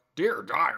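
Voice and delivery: loud, predatory put-on shark character voice. Trying out how to voice a shark, in a shark voice. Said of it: "How should I do a shark?".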